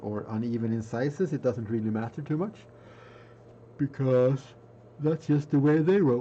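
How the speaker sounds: speaking through a yawn. Explaining a Warhammer 40K project, yawning while talking. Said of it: "sorry, yawning already".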